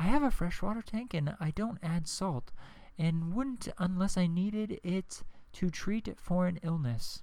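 hushed quiet library voice. Speaker reads out a commenter's reply in her voice: hushed library voice. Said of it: "She talks like this because she is in a library".

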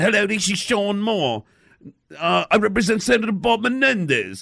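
clumsy, bad, put-on English accent. Retelling a prank phone call under a fake name, in a bad English accent. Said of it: "with his bad English accent".

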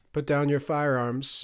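ordinary delivery

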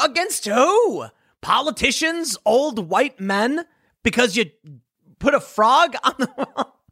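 high, slow, mock incredulous disbelief.

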